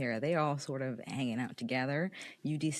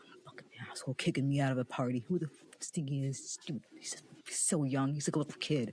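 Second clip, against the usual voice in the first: angry, mumbled muttering. Narrator voices a very angry basketball player storming out of a party: angry mumbling. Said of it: "he's mumbling".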